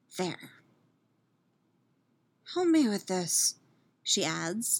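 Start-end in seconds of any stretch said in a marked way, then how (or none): 0.1-3.5 cautious, restrained, careful, gentle delivery. Picking a lock with pursuers behind, she asks her companion for help, as softly as possible. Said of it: "as softly as possible".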